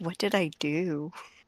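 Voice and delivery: very quiet, hushed voice spoken under the breath. A player's character turns to another character, speaking very quietly. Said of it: "say very quietly".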